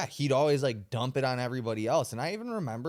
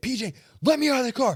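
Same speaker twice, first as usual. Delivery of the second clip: imitated scream, higher and louder; 11 semitones higher, 6 dB louder than usual. Retelling being stuck in a car in a ditch: retelling screaming at someone. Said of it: "I'm screaming at P J".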